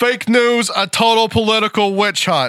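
loud, very high-pitched, all-out screaming voice. Reading an all-caps tweet aloud, screaming Trump voice. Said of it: "You want me to do my Trump voice for the tweet? ... so I can get away with screaming there".

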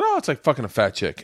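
ordinary talk

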